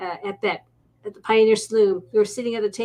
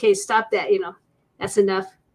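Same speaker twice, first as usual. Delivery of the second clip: normal talking voice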